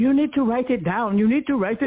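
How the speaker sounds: put-on English spoken with a Rwandan accent. Retelling what a young man on a bus said: Rwandan accent. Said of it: "Rwandan accent".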